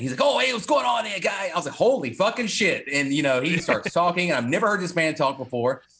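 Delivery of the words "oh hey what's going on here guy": put-on very high-pitched, heavy, thick New Jersey accent. Retelling how the saxophone player greeted you when you walked up, use a very jersey accent. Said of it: "he is very Jersey accent".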